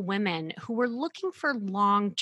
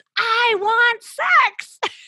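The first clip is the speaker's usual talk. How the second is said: high, loud, top-of-the-lungs scream; 14 semitones higher, 11 dB louder than usual. Retelling what a woman screamed out when urged to say it; imitating a top-of-lungs scream. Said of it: "screamed out at the top of her lungs".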